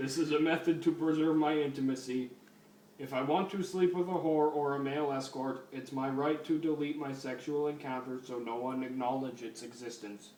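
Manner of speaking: usual speaking voice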